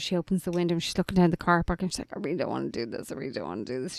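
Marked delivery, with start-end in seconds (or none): 2.2-4.0 put-on sniffling voice, lower and quieter. Retelling a moment from an episode, imitating Janae sniffling. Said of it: "She's sniffling".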